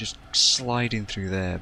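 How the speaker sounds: deadpan, heavily overdone sarcastic tone. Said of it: "I'm being massively sarcastic".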